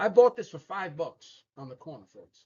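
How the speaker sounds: streetwise, street-seller New York accent. Coaching comic book sellers to hold their product with confidence: New York accent. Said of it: "my New York accent's coming out".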